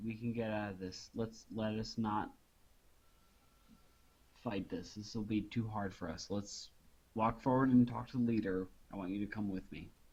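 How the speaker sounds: quick, rushed, private-sounding words. Player's character turns to another character in the scene, speaking quietly. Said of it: "I say quietly".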